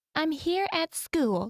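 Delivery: ridiculous put-on motherly voice. Describing a man from an anti-predator page and how he talks: imitating his fake mom voice. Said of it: "That's what he sounds like".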